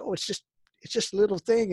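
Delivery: high, fast, bad Canadian accent. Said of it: "like, really bad Canadian accent".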